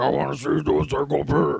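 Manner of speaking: words pushed through rough, guttural scream-growl. Showing how talking to people sounded: imitating guttural scream-talking. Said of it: "guttural screaming and then trying to talk to people like that".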